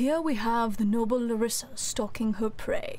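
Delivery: put-on nature documentary narrator voice. Read out Peanut's message the way Peanut asked for it, in a David Attenborough voice. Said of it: "in David Attenborough voice".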